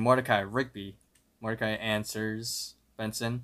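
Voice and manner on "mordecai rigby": ordinary talk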